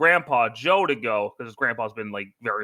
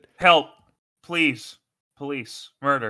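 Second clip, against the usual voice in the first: put-on sarcastic pleading cry. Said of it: "He is such a sarcastic shithead".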